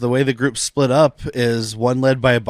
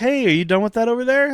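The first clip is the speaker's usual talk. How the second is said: play-acted light, innocuous, casual tone, very high pitch; 10 semitones higher than usual. Describing how a big guy casually checks on someone, imitating an innocuous tone. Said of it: "very innocuous".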